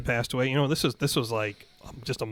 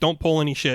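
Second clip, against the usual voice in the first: ordinary talk, nothing marked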